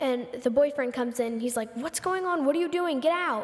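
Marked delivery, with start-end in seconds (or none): 1.8-3.4 put-on frantic, freaked-out outburst, pitched up. Retelling how the boyfriend walked in on the kitchen fire, acting out freaking out. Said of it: "freaking out".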